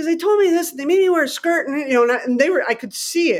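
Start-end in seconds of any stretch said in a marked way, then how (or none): 0.0-1.7 play-acted annoyed, high, whiny eleven-year-old voice. Speaker retells answering as an annoyed 11-year-old, imitating an annoyed child's whine. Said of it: "why are you annoyed?".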